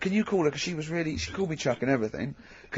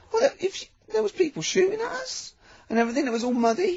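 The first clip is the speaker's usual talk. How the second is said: very high, put-on weepy pretend crying. Acting out a returning soldier telling Tony Blair about the fighting: mock crying. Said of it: "calm down, don't cry".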